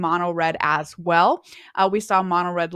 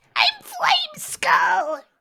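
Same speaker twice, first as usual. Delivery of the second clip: very high character voice swooping around. Showing what a card character sounds like: Flame Skull voice. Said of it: "This is his voice".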